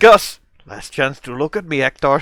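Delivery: put-on French accent. Quoting a scene to the other speaker, Gus Fring line in French accent. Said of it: "But you did it in a French accent".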